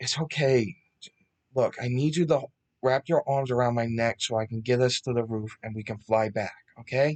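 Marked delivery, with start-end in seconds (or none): none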